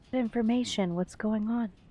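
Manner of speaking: sleepy whisper. Tessa yawns, sits up and asks what's going on; sleepy whisper. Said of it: "and whispers".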